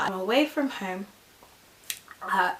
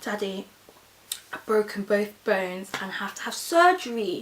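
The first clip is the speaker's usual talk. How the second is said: normal talking voice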